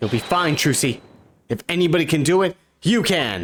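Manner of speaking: loud, energetic shout. Reading a game scene, yelling encouragement to Trucy: yelling encouragement. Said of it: "And in the ears".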